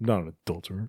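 soft, indistinct mumbled words. Retelling how a man at first answered a caller: mumbled words. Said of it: "at first he's like mumbling it".

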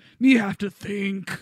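bad put-on cartoon robot brute voice. Answering someone who asked what was wrong, the speaker does a bad Grimlock impression. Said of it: "a bad impression of Grimlock from Transformers".

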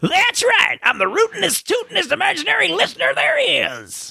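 put-on very high, old-timey western prospector character voice. Introduced as the show's imaginary listener, he answers in an old-timey prospector voice. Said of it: "He happens to sound like an old-timey prospector".

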